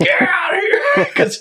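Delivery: very high, frantic yelling scream, acted. Telling a fishing story, re-enacts yelling to the wife in the truck: re-enacting screaming at wife. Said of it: "So I'm screaming at her".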